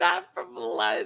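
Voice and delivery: slow, high-pitched mocking delivery. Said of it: "No, from London".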